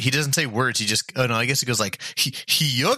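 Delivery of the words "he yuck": bad cartoon dog voice, pitched up. Attempting an impression of a cartoon character, bad Goofy impression. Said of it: "I was totally going to go for a goofy impression".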